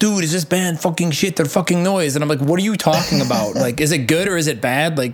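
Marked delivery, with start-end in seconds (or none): 0.0-2.2 put-on in-your-face screaming rant, held small. Retelling how a man right in their face screamed at them, retelling a scream. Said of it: "he was just screaming at me".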